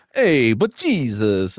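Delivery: put-on Brooklyn New York accent. Imitating an actor's line from The Last Temptation: Harvey Keitel impression. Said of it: "what's his name in The Last Temptation? He's like".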